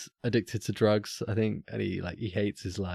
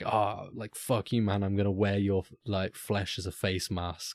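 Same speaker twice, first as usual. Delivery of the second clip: usual speaking voice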